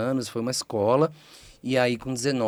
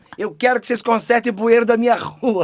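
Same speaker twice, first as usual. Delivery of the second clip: put-on fussing voice, higher and louder; 13 semitones higher, 10 dB louder than usual. Retelling how the grandmother confronted the police chief: imitating grandmother making a scene. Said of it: "Ela fazia um escarcel".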